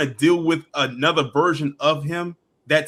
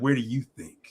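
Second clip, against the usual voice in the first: mock sultry, seductive, suggestive delivery; 3 semitones lower, 6 dB quieter than usual. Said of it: "She's like".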